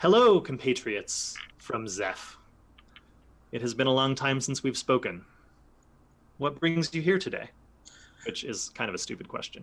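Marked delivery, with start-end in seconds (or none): 0.0-7.5 big, loud, commanding, projected character voice. Laligia steps forward to address the visitors from Zeph; loud Laligia voice. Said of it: "says again in in loud Laligia voice".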